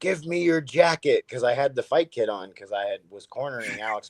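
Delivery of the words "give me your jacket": put-on child voice, high and yelled. Retelling how a kid in the crowd at a fight yelled, imitating the yell. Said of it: "one kid was yelling at me like".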